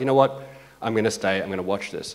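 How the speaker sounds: ordinary talk, nothing marked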